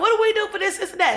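mock urgent yell, very high pitched. Retelling waking a friend for answers, the speaker quotes himself, retelling yelling. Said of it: "I just start yelling".

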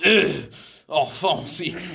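put-on French accent, fed up and repulsed. Showing how to do a French impression, in a disgusted French accent. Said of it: "if you want to do a French impression".

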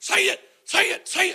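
relentless, high, screaming, insistent voice. Retelling a man screaming in the speaker's ear: imitating someone screaming. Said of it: "He's in my ear screaming".

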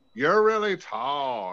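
stretched-out, drawn-out drawl. Retelling what a woman said at a bar, imitating her exact voice. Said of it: "this is her exact voice".

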